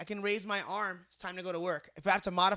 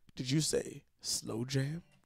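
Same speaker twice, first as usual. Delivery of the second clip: low, slow radio DJ delivery; 6 semitones lower, 4 dB quieter than usual. Scrolling through profiles, the speaker imitates Anthony's radio voice. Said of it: "Anthony with the radio voice".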